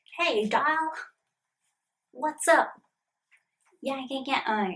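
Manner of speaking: put-on Brooklyn gangster-girl accent. Trying to do a character's accent after saying accents come out Irish: Harley Quinn accent. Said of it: "like the Harley Quinn accent".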